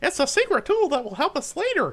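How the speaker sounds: squeaky, very high cartoon voice with bouncy pitch. Show host asks chat for suggestions, Mickey Mouse impression. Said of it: "that was my Mickey the Mouse impression".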